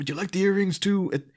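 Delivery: slight put-on Irish accent, a bit high. Imitating the way Gordon offers the earrings: Gordon's slight Irish accent. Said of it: "the way he says it".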